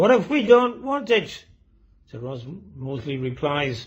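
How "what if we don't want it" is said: put-on very high, shrill yelling shout in cockney accent. Telling of a man standing at the back of a meeting room, retelling his shout. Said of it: "he stands up and he shouts out".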